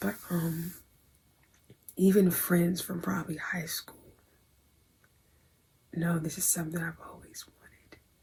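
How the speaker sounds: hushed whisper. Telling the audience about something always wanted, whispering. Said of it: "I'm whispering".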